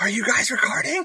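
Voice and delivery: loud whisper-yell, pitched very high. Calling over to someone who just brought water: whisper yell. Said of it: "I'm gonna whisper yell".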